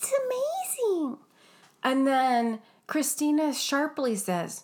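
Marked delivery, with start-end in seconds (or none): 0.0-1.2 very high-pitched put-on voice. Retelling what a contestant said to the judges: Malia impersonation. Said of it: "let me do a Malia impersonation".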